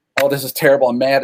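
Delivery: ordinary talk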